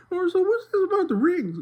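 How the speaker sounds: squeaky, very high-pitched voice. Retelling a brother's bit done in a Mickey Mouse voice. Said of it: "my brother can do a Mickey Mouse voice".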